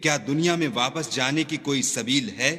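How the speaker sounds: ordinary talk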